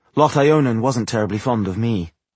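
ordinary delivery

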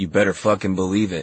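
plain reading voice

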